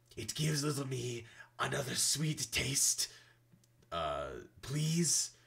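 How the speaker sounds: breathless, raspy creature voice. Narrator voicing a chained creature, in a raspy breathless creature voice. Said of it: "The creature rasps, breathlessly".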